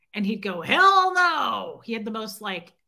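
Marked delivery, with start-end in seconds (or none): 0.6-1.8 very loud, very high, gravelly growl. Retelling a friend's reply to a joke: imitating a growly, gravelly voice. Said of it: "growly, gravelly voice".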